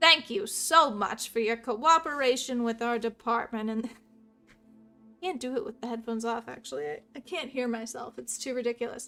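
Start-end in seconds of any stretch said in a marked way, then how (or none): 0.0-3.7 loud, put-on mid-Atlantic accent. Voicing an investigator thanking someone for cooperating, trying a transatlantic accent. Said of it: "should have a transatlantic accent".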